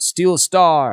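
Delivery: high, loud yelling out.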